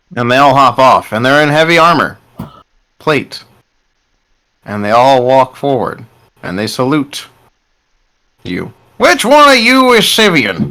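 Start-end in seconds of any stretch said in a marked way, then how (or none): 9.0-10.7 very high-pitched, swooping goblin character voice. Voicing a goblin in armor asking the group a question: goblin voice. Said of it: "says the goblin".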